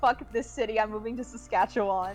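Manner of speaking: ordinary talk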